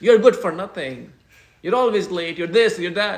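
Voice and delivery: very loud, fast, harsh, angry telling-off voice. Speaking to an audience, acting out someone scolding them, in a mock-angry harsh tone. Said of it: "speaks very in an angry tone to me".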